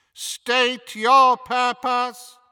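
very high, loud, echoing, metallic clanging voice. Narrator voicing a face formed from twisting iron gates, clanging, echoing voice. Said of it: "spoke in a clanging, echoing voice".

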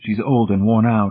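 ordinary delivery

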